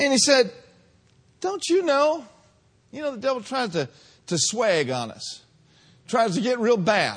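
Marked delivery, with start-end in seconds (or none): 1.4-2.2 put-on sassy tone, higher pitch. Retelling Pilate's challenge to Jesus: sassy Pilate voice. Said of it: "Pilate got sassy".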